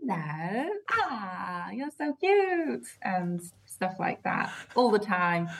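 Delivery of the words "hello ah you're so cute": put-on slow, high, swooping sing-song baby talk. Showing the cat voice used with the cats: baby voice for a cat. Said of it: "a baby or something".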